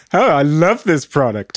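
sarcastic, insincere, put-on ad-read style. Pretending to do a product ad on the show, in a sarcastic ad read. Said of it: "doing like a sarcastic. ad".

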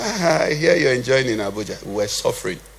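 acted mocking, needling, taunting tone. Retelling what a pastor in Lagos said when asked for help: retelling a mocking remark. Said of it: "mockingly said to me".

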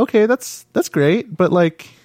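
high, patient, teacher-like tone. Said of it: "I was like".

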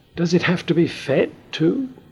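amazed, astonished, very high-pitched voice. A character repeats back what another has just said, astonished. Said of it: "Repeated Moomin, astonished".

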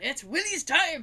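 put-on Scottish accent. Quoting a cartoon groundskeeper from a Halloween spoof: Willie Scottish accent. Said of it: "I can't do a great Scottish accent".

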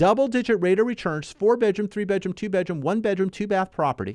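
without pausing for breath. Speaker reading out a property ad, all in one breath. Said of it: "all in one breath I did that".

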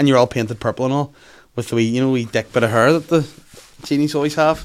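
normal talking voice

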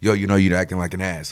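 normal talking voice

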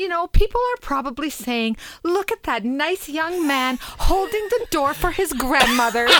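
put-on speaking with an English accent. Retelling what Andrew said after closing her car door: Andrew's English accent. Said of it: "In his English accent".

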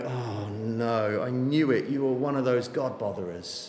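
put-on scornful voice. Acting out how people sneer on finding out you believe, mock-disdainful. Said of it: "they look at you with disdain and they go".

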